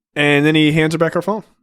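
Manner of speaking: plain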